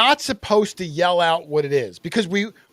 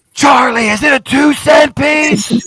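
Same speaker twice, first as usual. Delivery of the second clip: put-on stage whisper blasted out very loud; 8 semitones higher, 8 dB louder than usual. Describing a noisy culprit who thinks she whispers, imitating Lynn's loud whisper. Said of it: "Lynn thinks she's whispering".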